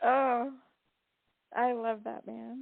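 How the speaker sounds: tearful voice choking up, crying while speaking. After telling the other speaker not to hold back tears, voice choking up, crying. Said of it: "I'm trying not to cry".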